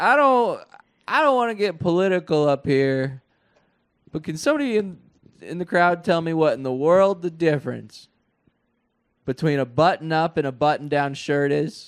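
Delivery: high, silly, put-on comedy voice. Recounting a stand-up joke, the speaker delivers it in a put-on comedy voice. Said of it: "do that like voice the whole time".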